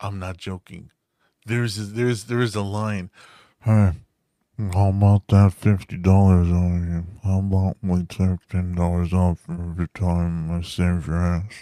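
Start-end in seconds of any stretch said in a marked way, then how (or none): 3.6-11.6 loud, fat voice, chewing each word. Quoting a movie line to show that the voice sounds fat: Steven Seagal impression. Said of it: "even his fucking voice sounds fat".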